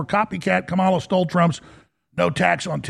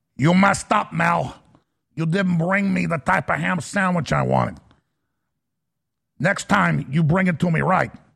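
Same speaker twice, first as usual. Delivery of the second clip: fake, poorly done put-on Cuban accent. Imagining speaking to someone at a cuban restaurant in a bad cuban accent. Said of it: "if I did a Cuban accent".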